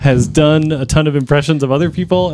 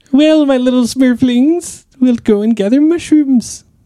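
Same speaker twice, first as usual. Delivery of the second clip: very high, squeaky, crotchety cartoon old-person voice; 9 semitones higher than usual. Asked to do an impression during a guessing game: Papa Smurf impression. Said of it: "Can you do a Papa Smurf impression?".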